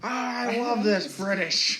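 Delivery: high, very slow, drawn-out character voice. Joking with friends: Little Nicky voice. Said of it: "Was that your Little Nicky impression?".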